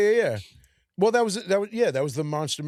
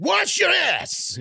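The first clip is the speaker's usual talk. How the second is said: rough, very high-pitched comic delivery; 13 semitones higher, 4 dB louder than usual. Explaining where a line comes from, doing a Chris Farley delivery. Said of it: "it's definitely a Chris Farley delivery".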